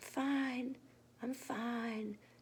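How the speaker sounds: small, tiny, hushed murmur, very quiet. Narrator reads the little fox Khan answering Aki, in a tiny murmur. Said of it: "Khan murmured in a tiny voice".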